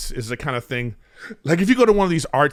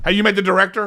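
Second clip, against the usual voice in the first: tense, harried, stressed, pitched-up delivery; 6 semitones higher than usual. Retelling what a stressed first AD asked on set: imitating a stressed assistant director. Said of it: "This is what he says, just like this".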